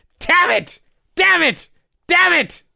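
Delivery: very high, very slow, drawn-out screaming. Retelling how a wrestler sold an injury: imitating Sid screaming. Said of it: "That was his selling".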